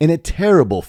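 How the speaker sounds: plain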